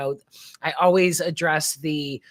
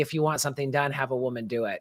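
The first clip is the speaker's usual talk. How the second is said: put-on sarcastic, needling, tongue-in-cheek teasing tone; 3 semitones lower, 5 dB quieter than usual. Retelling what he said after appointing a woman: imitating a sarcastic, teasing remark. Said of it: "with sarcasm and poking at everybody".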